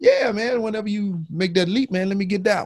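play-acted, very high, playful, joking tone. Retelling a chat with him about upgrading cameras, retelling a joking remark. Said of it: "and jokingly".

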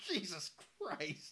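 put-on exasperated exclamation. Retelling a film scene where everything goes wrong: imitating someone overwhelmed. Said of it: "He's just so overwhelmed".

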